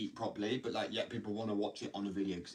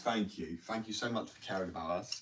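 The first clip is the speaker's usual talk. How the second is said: openly mocking, sarcastic tone. Ranting about the war on substances, the speaker answers the authorities, sarcastic. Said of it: "I'm shit sarcasm".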